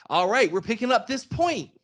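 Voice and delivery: very high, bright, eager, chipper youthful voice. Imitating the game's annoying AI companion during a mode: imitating a young chipper voice. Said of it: "a young sounding chipper".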